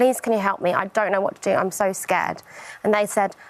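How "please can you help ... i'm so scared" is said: put-on tearful, crying voice. Retelling a plea made at the police station, retelling own tearful plea. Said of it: "crying my eyes out and saying".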